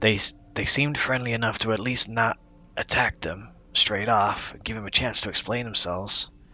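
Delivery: hushed, whispering voice. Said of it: "whispering to s-, to Pyga-, um, Styles".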